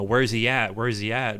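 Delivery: ordinary talk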